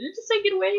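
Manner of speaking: stammering, stuttering, very high-pitched voice with disbelief. Retelling how a voice told her to get away, she acts out her own stutter. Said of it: "I even like stuttered a little bit".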